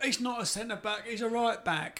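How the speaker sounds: put-on Cockney accent, high and slow. Quoting what people say after his mistakes: imitating fans in Cockney accent. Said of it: "I don't know why they're Cockney".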